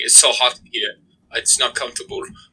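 put-on poor German-sounding accent. Imagining the predator role played by Van Damme, doing a bad Jean-Claude Van Damme impression. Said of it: "Why is he German?".

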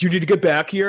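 play-acted angry, confrontational. Retelling how an angry man confronted the speaker at the machine: imitating an aggressive, pissed man. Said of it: "he's super aggressive because he's pissed".

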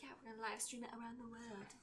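put-on fancy accent. Quoting a woman's line from a movie, done in her fancy accent. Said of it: "In her fancy accent".

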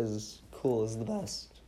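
voice cracking partway through. A speaker praising the cool personality in a game, voice crack. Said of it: "That was a voice crack".

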